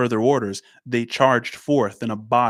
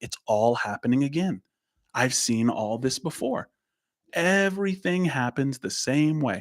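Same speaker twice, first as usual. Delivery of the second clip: wonder-struck, fascinated, marveling tone, not sad; 2 semitones higher, 4 dB quieter than usual. Speaker imagines how Benjamin says this, acting out Benjamin with fascination. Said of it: "with fascination".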